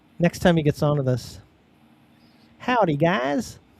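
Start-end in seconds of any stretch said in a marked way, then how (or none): 2.6-3.6 put-on broad, laid-on, pitched-up strong Texan accent. Teasing about how Colton will greet them next time, Colton's strong Texan accent. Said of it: "having like a strong Texan accent".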